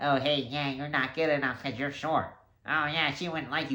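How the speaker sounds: put-on squeaky nerdy pipsqueak voice. Giving the listener an example of the inner bully, squeaky pipsqueak nerd voice. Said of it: "He has a squeaky voice".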